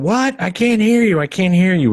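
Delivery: very high-pitched, shrill shouting yell. Retelling a film scene where a character yells at the TV: imitating someone yelling. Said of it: "she's yelling at the T V".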